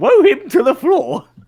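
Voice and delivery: shrill voice, r said as w in throw, floor. Quoting what a character wants to say, Monty Python voice, R said as W. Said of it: "I was not expecting a Monty Python reference".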